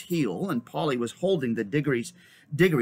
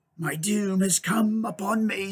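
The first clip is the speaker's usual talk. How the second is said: eerily composed, dreadfully calm, pitched-up voice; 6 semitones higher than usual. Narrator reading the witch's line in the story, horribly calm. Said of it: "said the witch in a voice of horrible calmness".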